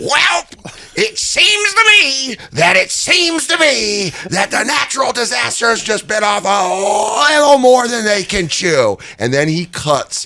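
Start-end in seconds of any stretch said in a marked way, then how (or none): 0.0-9.0 put-on very high, slow Minnesota accent, "a" stretched out. Retelling a wrestling promo, imitating Hawk's Minnesota accent. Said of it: "a Minnesota accent that I can't get".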